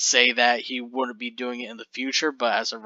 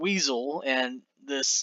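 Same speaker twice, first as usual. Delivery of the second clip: ordinary talk, nothing marked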